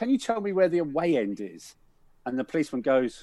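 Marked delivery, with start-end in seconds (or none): 0.0-1.7 terrified, petrified voice with swooping pitch. Retelling a young lad asking a policeman for help: imitating a terrified young lad. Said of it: "absolutely terrorised".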